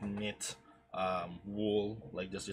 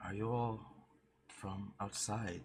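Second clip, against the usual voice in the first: soft-spoken, gentle delivery. Voicing the eldest child who asks the group a question: soft-spoken. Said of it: "in a bit of a soft, uh, tone".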